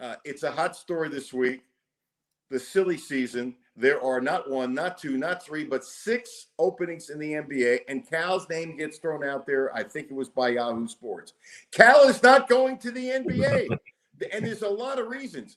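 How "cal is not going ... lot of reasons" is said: heated, raised, pitched-up yelling. Talking about Cal and the NBA openings, give your view, yelling. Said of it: "I'm yelling now".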